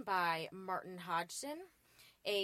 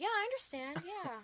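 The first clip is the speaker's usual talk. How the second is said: sympathetic voice pitched very high; 9 semitones higher than usual. Asked for their turn, the speaker puts on a sympathy voice. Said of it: "I have that sympathy voice now".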